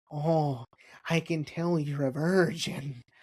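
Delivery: very slow put-on character voice, every word drawn out. Retelling what a man handing over paper bags said: Peter Lorre voice. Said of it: "He sounded like Peter Lorre".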